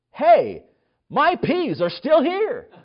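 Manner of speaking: put-on shrill, very loud, very high indignant little girl voice. A parent retells their three-year-old after praying: imitating an indignant child. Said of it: "in an indignant voice said".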